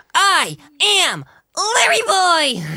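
high, loud, slow, drawn-out scream. Doing a VeggieTales character for friends: screaming as Larry Boy. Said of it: "Screaming my head off".

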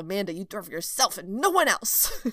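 mock angry, loud tone rising in pitch. Retelling saying a new rule out loud: imitating own angry tone. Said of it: "it was with an angry tone".

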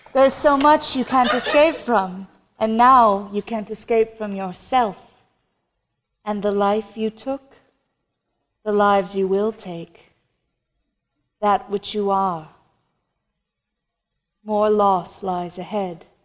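haunting, unsettling, eerie, creepy voice. Voicing the mysterious voice that addresses a character, use a creepy voice. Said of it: "The creepy voice that told us".

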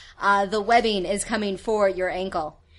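ordinary talk

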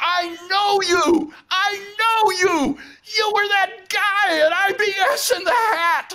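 very high, drawn-out, thrilled, excited yelling. Retelling a man coming home and recognizing the speaker, retelling an excited yell. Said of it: "he was yelling".

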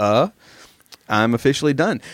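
ordinary talk

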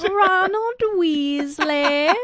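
put-on British accent, pitched very high. Trading Harry Potter character names with another speaker, in a put-on accent. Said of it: "a master of dialect".

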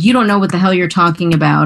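ordinary talk

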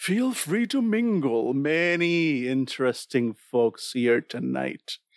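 slow, unhurried, drawn-out delivery. Narrating a scene, voicing the strange being's words in a deep voice. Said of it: "you hear a deep voice coming from this being".

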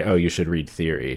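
normal talking voice

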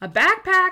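shrill, very high, very loud, incredulous outburst. Narrator reads Sanchez reacting to what Lara said, incredulous. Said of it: "Sanchez's tone became incredulous".

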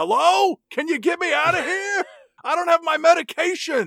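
play-acted shrill, very high, loud, panicked screaming. Imagining a scene of someone locked in a mall: mock screaming for help.

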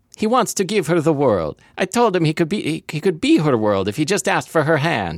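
put-on, very high-pitched Italian accent. Reading a story aloud on the show, committed to an italian accent. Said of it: "I'm committing to the Italian accent".

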